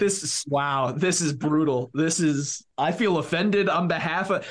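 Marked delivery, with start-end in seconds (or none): none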